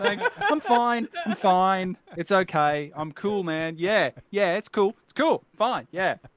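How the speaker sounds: put-on flustered voice. Retelling own reply to a compliment on their voice: mock flustered. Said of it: "the vapors".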